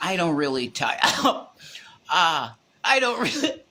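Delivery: cracking up mid-line, laughing through broken words. Quoting someone's answer to an interview question, laughing while talking. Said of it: "Sorry, I made myself laugh".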